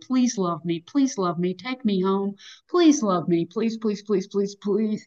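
eager, repeated pleading, like an eager dog. Acting out a Labrador at an adoption center wagging its tail: mock pleading. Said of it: "like being a darn Labrador retriever at an adoption center".

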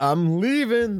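put-on yelling. Retelling how a character yells while leaving the house: imitating someone yelling. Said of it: "So he goes and yells".

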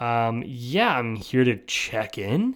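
very slow, heavy sarcasm laid on thick. Retelling his answer at a hotel check-in, retelling a sarcastic reply. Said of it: "I said it with as much sarcasm as I could muster up".

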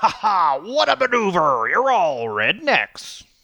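slow, high, villainous wrestling announcer voice. Imitating a wrestler acting as an evil announcer: imitating an evil announcer. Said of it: "he was Vince McMahon the announcer, but evil".

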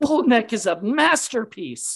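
high, slow outraged yell. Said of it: "he yells it at him".

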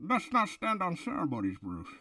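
muffled villain voice, resonating as through a glass jar. Showing how to do the Bane voice by speaking into a glass jar. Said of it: "if anybody ever wants to do the Bane voice, just get yourself like a glass vase or a glass jar and you just go".

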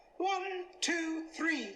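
voice pushed way up, very high pitch. Demonstrating voice changes by counting to three, pitched-up voice. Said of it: "Just pitch up your voice".

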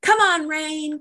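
play-acted, high, gleeful, excited yell. Retelling running onto the porch as a rainstorm began, retelling a scream. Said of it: "I'm screaming like".

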